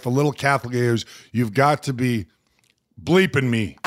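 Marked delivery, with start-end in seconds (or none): none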